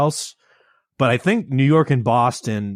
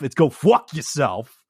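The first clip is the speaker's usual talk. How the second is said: shifting into a put-on New York accent. Explaining how they curse when really angry, demonstrating with a New York accent. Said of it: "I slip into a New York accent".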